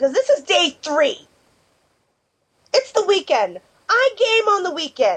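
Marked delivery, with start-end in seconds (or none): 0.0-3.6 annoyed, much higher. Missing a weekend of gaming on day three, annoyed. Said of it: "I can tell".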